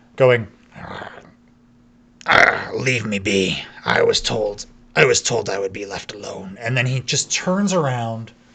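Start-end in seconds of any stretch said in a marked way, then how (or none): 0.2-6.6 rough, gruff, low grumbling voice. Voicing a figure the listener approaches cautiously: rough, gruff voice. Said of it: "you hear a rough, a gruff voice".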